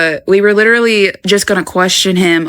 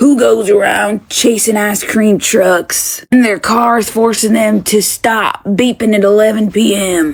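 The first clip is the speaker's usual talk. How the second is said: put-on very old, aged man's voice. Retelling what a man said when he came up to talk: imitating a very old voice. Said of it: "in a very old voice".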